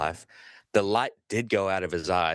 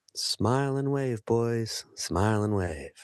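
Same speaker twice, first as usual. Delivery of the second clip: put-on small, tiny voice of a little boy; 3 semitones higher than usual. Retelling a four-year-old boy calling down from the roof, little voice. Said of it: "this little voice said".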